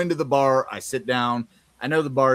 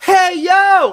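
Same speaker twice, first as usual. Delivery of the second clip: very loud, shrill, high-pitched shout; 12 dB louder than usual. Retelling calling out to someone across a bar: retelling own shout across a bar. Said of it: "shouted out her name".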